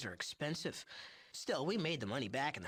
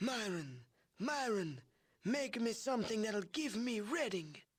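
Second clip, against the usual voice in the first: put-on wheezing voice, much higher pitch; 7 semitones higher than usual. Recounting a crime lord's request, imitating Mordino's wheezing voice. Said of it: "in his wheezing voice and says".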